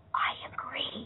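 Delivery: put-on whisper. Retelling what classmates said to them after class: imitating a whisper. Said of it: "in a whisper".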